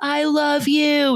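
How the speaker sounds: mock scream, very high and loud, carrying far. Speaker retells running past people and screaming to them, retelling a scream. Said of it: "I scream like".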